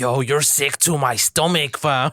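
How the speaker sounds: put-on slow Toronto street youth slang accent. Imitating young Toronto guys talking: imitating Toronto youth accent. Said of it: "Toronto side that do it".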